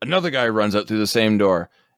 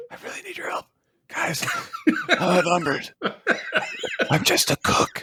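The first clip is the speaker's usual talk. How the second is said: hushed whisper, barely voiced; 14 semitones higher, 4 dB quieter than usual. Acting out a cook calling for help whom no one can hear: whispering. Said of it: "they can't hear him because he's whispering".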